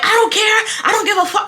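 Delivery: very high, shrill, screeching screaming. Retelling a neighbor's argument over a lawn patch: imitating someone screaming. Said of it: "She starts screaming".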